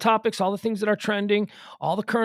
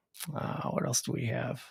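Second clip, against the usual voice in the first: low, soft, very quiet near-whisper; 8 semitones lower, 10 dB quieter than usual. Speaker worried about losing their voice tries talking low. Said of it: "but if I talk low".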